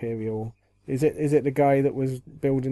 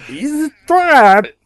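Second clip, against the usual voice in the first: put-on alien admiral voice; 14 semitones higher, 15 dB louder than usual. Suggesting an actor could play Admiral Ackbar: Admiral Ackbar voice. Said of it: "used his Shivan voice for it".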